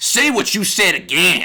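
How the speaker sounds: sudden put-on rural country accent. Speaker retells what a man said to him, in a random country accent. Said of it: "a random country accent came from".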